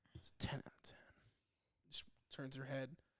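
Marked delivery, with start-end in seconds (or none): 0.2-1.0 put-on hushed whisper, bashful yet badass. Imitating a friend's sixth-grade self rating a movie: imitating someone saying it shyly but badass. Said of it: "she'd probably say it, like, shyly, but also, like, kinda badassly".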